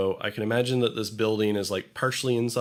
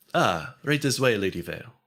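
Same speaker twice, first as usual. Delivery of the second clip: put-on fancy, refined dwarf character voice. Narrator voicing the dwarf greeter who seats the party, in a fancy dwarf host voice. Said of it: "a fancy dwarf who greets you".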